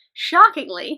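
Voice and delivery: loud, put-on sarcastic delivery.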